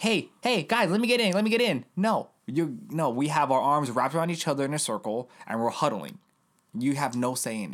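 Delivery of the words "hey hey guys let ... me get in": put-on high, whiny, pleading little-kid voice. Mocking a group as a kid begging into a huddle: imitating a whiny little kid. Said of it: "like that whiny little kid that's like".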